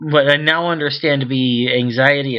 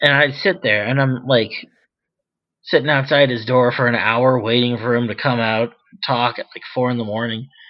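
ordinary delivery

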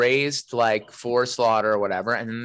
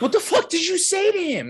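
very high, swooping, rattled and upset outburst. Retelling Kate standing up upset: imitating someone upset. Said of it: "she got upset".

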